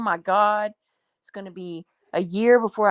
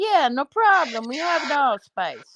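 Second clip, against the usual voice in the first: bad, pitched-up fake Jamaican accent drifting Italian; 5 semitones higher than usual. Talking about finding allspice, the speaker acts out the locals' answer in a bad jamaican accent. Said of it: "That sounded more Italian".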